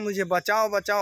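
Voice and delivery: normal talking voice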